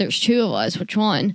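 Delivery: ordinary delivery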